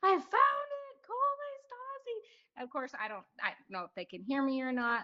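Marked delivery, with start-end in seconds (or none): 0.0-2.6 put-on very high, slow, long drawn-out shriek. Retelling finding the treasure on the trail: retelling a scream. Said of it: "start screaming at the top of my lungs".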